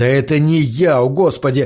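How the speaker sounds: usual speaking voice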